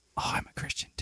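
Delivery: hushed, secretive, confiding whisper. Retelling what a manager said at lunch: imitating someone whispering. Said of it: "You don't have to whisper that".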